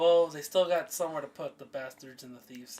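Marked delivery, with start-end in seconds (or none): none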